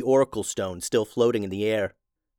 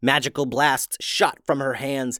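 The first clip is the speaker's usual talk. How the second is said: usual speaking voice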